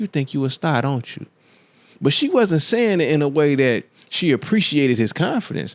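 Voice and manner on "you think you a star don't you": whispered. Retelling what a TV show host whispered to a contestant: imitating a whisper. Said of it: "she was whispering to him, she said".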